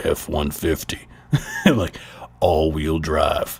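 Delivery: very low, deep, slow commercial announcer voice. Pretending to voice a Ford commercial, in a deep Ford commercial voice. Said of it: "I literally used to like pretend to do like these like these like uh, Ford commercials ... my voice just be like low".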